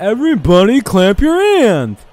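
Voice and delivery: loud, very high, dumb, recorded announcer call. Host mocking a recording heard with no fans last year, imitating a dumb-sounding recording. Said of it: "how dumb the voice of that".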